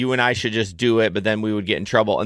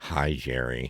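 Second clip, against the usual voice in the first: mock very low, hushed, quiet, irritated annoyed voice; 11 semitones lower, 10 dB quieter than usual. Playing back to your co-host how they just greeted you on the show, imitating an annoyed greeting. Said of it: "You were like, "Hi, Jerry." Like, are you annoyed with me?".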